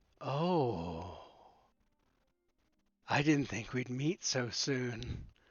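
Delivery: very slow creature voice with drawn-out "oh". Voicing a creature that turns its head to a player: voicing a creature. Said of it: "it goes".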